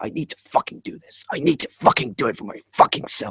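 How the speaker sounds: put-on whispered, breathy, tearful, passionate outpouring. Retelling Jake Roberts on the floor after a stretch, imitating Jake Roberts crying. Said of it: "He's on the floor crying".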